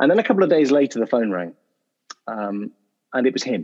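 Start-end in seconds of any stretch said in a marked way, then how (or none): none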